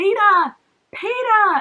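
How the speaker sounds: very high, loud, bad American accent. Mimicking a film heroine calling out to Peter, in a bad Katniss American accent. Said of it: "I'm not very good at American accent".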